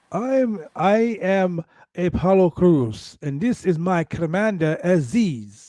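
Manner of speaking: put-on South African accent. Retelling a wrestler's ring entrance, imitating Apollo Crews' South African voice. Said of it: "comes to the ring with his South African voice".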